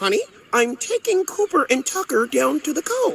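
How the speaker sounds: high-pitched dolphin voice. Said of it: "They be all like".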